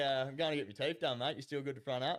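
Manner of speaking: ordinary talk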